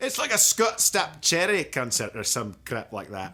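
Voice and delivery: put-on Scottish accent. Repeating the joke after being asked for it: scottish voice. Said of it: "say that in a Scottish voice".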